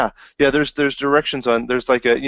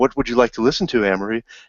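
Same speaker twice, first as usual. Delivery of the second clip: calm machine-like voice. Retelling a video where the car computer speaks: HAL 9000 voice. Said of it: "in the hal nine thousand, two thousand one voice".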